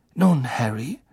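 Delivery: plain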